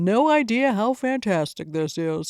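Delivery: slow, drawn-out delivery savouring each word. Repeating an actor's line they love, imitating Alec's line delivery. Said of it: "I always love the way this actor says that".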